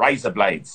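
Australian vowels on "razor blades". Teaching someone how to say a phrase, demonstrate an Australian accent. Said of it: "There you go".

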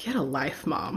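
low, dead-dry deadpan delivery. A mother retells her daughter's response to a book dedication, a deadpan reply.

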